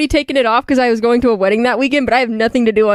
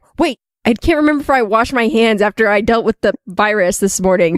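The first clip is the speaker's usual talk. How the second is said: plain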